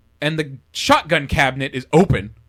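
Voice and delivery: ordinary talk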